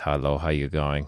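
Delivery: put-on German-accented voice. Describing their German dad Wolfgang, imitating Wolfgang's German accent. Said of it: "He speaks like this".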